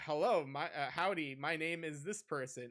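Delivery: wooden, stilted, amateurish, really bad line reading. Retelling a show scene where a grandma reads a part: imitating really bad acting. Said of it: "really bad acting".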